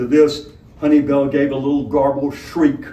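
ordinary delivery, nothing marked

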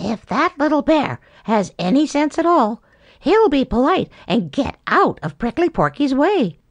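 half-to-oneself mutter. Narrator reads a watching character's remark as the bear meets the porcupine: muttered. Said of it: "muttered Sammy".

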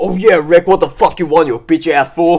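acting tough, tough-guy bravado. Answering the other speaker's challenge to not get offended: acting tough. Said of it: "hard lad".

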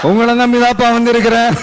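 plain

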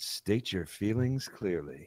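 put-on seductive, sultry, sexy voice. Reading a text aloud, trying a put-on sexy voice. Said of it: "I feel like I got to try to do a sexy voice here".

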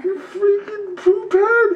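very high, slow laughing whine.

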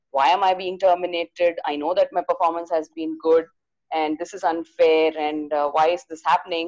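ordinary delivery

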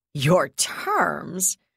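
contemptuous, scornful sneer. A woman answers someone who has just offered their terms: sneering. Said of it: "she sneered".

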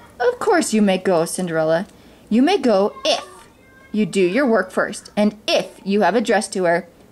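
plain

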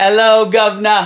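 loud put-on British accent. Greeting while practicing an accent, put-on British accent. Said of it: "just trying to practice my British accent".

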